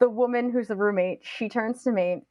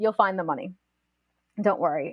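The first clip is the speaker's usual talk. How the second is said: normal talking voice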